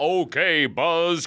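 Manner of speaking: high-pitched cartoon robot voice. Showing a first childhood impression from watching Gigantor: Gigantor impression. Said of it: "That was my first impression".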